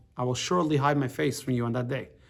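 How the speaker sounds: normal talking voice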